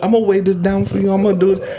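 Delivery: put-on high, creepy little-boy voice. Imitating how Chris Angel talks: Chris Angel little boy accent. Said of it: "It's a little boy accent".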